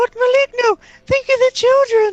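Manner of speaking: very high, very loud outcry. A player's character, Ron, cries out to Maligno: crying out. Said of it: "Ron's gonna cry out".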